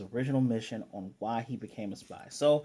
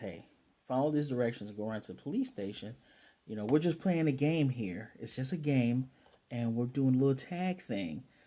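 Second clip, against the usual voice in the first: normal talking voice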